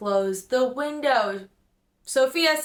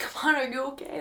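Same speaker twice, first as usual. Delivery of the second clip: hushed whisper, under the breath; 5 dB quieter than usual. Retelling how a friend checked on the speaker after a fall: imitating a friend whispering.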